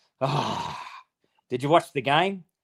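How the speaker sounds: put-on slow, gloomy, dejected, downcast tone. Retelling how a dad answered the phone after a loss: imitating dad's gloomy phone greeting. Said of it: "He answers the phone like this".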